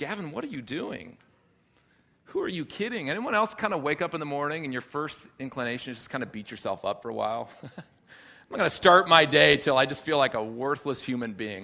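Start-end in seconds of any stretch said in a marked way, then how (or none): 0.0-3.1 harsh, condemning, accusing voice. Speaker acts out the voice of discouragement in his head, condemning inner voice. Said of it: "a voice of condemnation against me, and it sounds like this".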